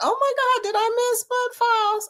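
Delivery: very high, excited, delighted squeal of surprise.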